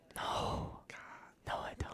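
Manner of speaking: slow, very quiet whisper, barely voiced. Answering a question about liking stuffing, whispering. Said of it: "Stop whispering".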